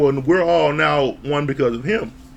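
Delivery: ordinary delivery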